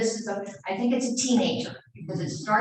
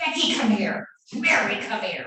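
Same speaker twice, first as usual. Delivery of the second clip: mock, very crabby, grouchy voice. Retelling how he would call the children, imitating a very crabby voice. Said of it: "in a very crabby voice".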